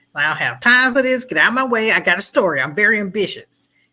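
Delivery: play-acted tough, quick, snappy, no-nonsense gutsy talk. Imitating how Lois Lane talks in Superman: gutsy, snappy Lois Lane. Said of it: "She's gutsy and tough and quick and snappy".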